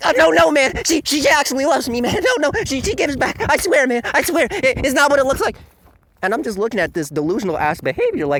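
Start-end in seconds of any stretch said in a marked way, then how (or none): 0.1-5.6 very high-pitched, insecure little-loser voice. Mocking a game's defensive fans, imitating insecure emo fans. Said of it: "here comes the insecure emo little losers".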